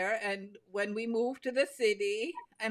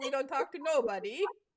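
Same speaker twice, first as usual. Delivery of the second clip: Upper Michigan accent; 4 semitones higher than usual. Repeating a local saying, in an Upper Peninsula Michigan accent. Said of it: "I love the way you said that".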